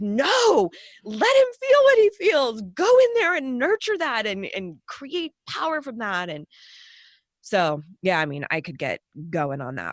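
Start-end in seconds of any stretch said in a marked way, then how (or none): 0.0-6.3 play-acted loud, very high, wildly swooping scream. Retelling reacting to a documentary on the guards: retelling own screaming.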